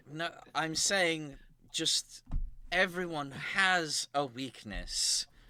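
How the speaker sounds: flustered, slowed and halting.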